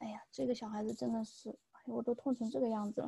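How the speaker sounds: soft, quick, exasperated grumbling under breath.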